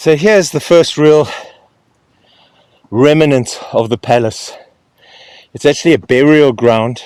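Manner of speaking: winded, puffing, loud and out of breath. Showing the first real remnant of the palace, out of breath. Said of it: "I am out of breath".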